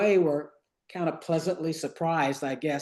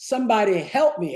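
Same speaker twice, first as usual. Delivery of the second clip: mock, raised, high-pitched half-yell; 5 semitones higher, 5 dB louder than usual. Retelling getting off the bus and calling out: retelling a yell. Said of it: "I just sort of kinda yelled it out".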